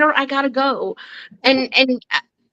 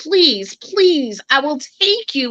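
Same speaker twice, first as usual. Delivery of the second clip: play-acted imploring, pleading, slow drawn-out begging. Retelling how they begged someone to go to the emergency room: retelling own begging. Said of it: "and I begged him".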